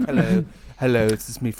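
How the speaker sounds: really smooth, rich put-on showman voice. Imagining how the other speaker will sound next week: mock smooth, rich voice. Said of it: "for a really smooth, rich voice".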